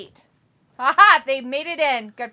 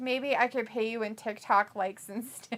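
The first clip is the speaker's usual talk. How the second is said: ordinary talk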